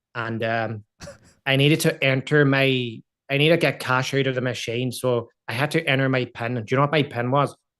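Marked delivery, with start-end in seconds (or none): 1.5-7.6 loud, put-on Northern Irish accent. Telling a story about entering a PIN at a cash machine: Northern Irish accent. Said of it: "So they kind of talk like that".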